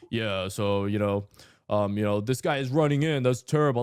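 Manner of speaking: put-on very low, artificially deepened European accent, rising. A player recalls how he talked while queueing with Europeans, put-on deeper voice, European accent. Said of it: "Like I had like a deeper voice because I'd be like".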